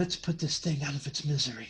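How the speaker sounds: whispered voice. Voicing a character who speaks to a companion: whispered voice. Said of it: "in that whispered voice".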